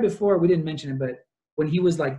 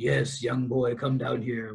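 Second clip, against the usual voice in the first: acted laughing, inviting, low and deep chuckling; 4 semitones lower, 5 dB quieter than usual. Retelling how Barlow calls Mark down to the cellar: imitating Barlow chuckling deeply. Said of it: "chuckling deeply".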